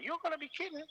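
very high-pitched voice in a thin register. Retelling what a player said to the referee: high-pitched Steve Roach voice. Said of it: "'cause Steve had a very high voice".

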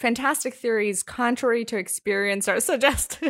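giggly speech broken up by laughter. Reading a list item aloud to another speaker, laughing while reading. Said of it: "can't even complete it without laughing".

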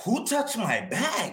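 mock very high, drawn-out, alarmed freaked-out panic. Retelling panicking at airport security: imitating own past panic. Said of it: "And I start freaking out".

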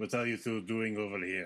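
put-on voice in Russian accent. Voicing a drow who questions two Quaggoths: Russian accent. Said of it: "He's got a Russian accent".

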